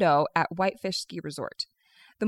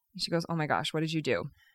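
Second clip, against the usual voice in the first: ordinary talk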